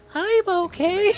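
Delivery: put-on high-pitched cartoon mouse voice. Retelling the announcer answering for the umpire: high-pitched Mickey Mouse voice. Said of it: "Vin Scully's fucking high-pitched Mickey Mouse voice".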